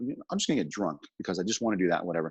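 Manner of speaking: ordinary talk, nothing marked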